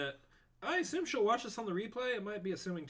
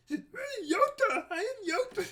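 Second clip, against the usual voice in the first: squeaked out, high-pitched and slow. Imitating a friend's Yoda impression: imitating Roxy's Yoda impression. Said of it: "She sounds like that when she does it".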